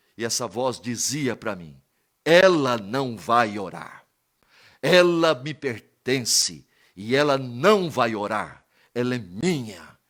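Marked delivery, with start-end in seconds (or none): 2.3-9.9 eerie, slow, loud, sinister voice full of terror. Retelling what a strange voice said during prayer: imitating an eerie terrifying voice. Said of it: "uma voz tétrica, uma voz de terror".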